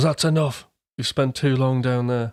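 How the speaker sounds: plain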